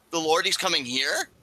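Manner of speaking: mock high-pitched voice cracking with startled fear. Retelling a character's reaction to hearing the Lord will visit: imitating a cracking, fearful voice. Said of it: "his voice kinda cracks a little bit".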